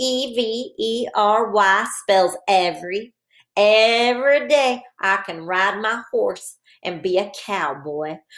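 put-on, slow, drawn-out cowboy voice. Leading boys and girls in practicing to spell a word, in a cowboy voice. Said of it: "Let's practice spelling and saying the word every in our cowboy voice".

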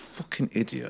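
muttering under breath. Speaker recalling the moment he hit the car door, retelling a mutter under breath. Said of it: "it's under my breath".

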